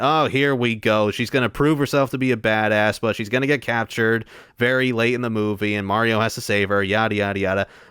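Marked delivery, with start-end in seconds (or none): none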